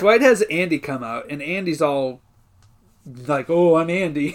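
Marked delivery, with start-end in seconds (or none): 3.5-4.3 hemming and hawing, evasive, hedging. Retelling a scene, imitating Andy hemming and hawing. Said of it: "hemming and hawing, not giving an answer".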